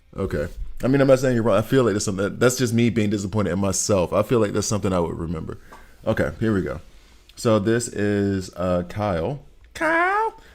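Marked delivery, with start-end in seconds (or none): 9.8-10.3 very high, squeaky put-on voice. Naming a game character called Kyle: South Park voice. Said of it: "I keep doing that South Park, South Park voice".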